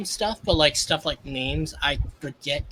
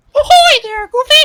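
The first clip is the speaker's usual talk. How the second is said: high cartoon voice, much louder; 15 dB louder than usual. Asked if they can do Mickey Mouse, the speaker tries a Mickey Mouse voice. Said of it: "can you do Mickey Mouse?".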